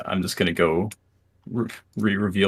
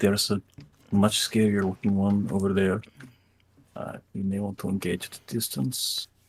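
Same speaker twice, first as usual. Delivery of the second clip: soft, hushed half-whisper, all breath; 4 dB quieter than usual. A player's character speaks to the party during a fight; half-whispering. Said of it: "I whisper".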